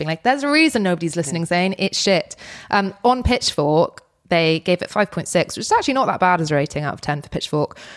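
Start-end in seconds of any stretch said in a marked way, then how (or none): none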